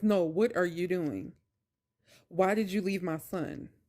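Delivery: mock-mean, angry put-on tone. Speaker retells a man on the phone scolding her about his son, mock-mean voice. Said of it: "to the mean voice".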